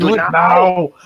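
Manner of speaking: put-on mixed Scottish and Austrian accent. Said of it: "Scottish, Austrian kinda mix".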